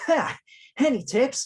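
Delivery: very high, loud, upbeat, punchy cartoon hero voice. Asked on the spot to read a question in the Sonic voice: Sonic voice. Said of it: "Can you read it in the Sonic voice?".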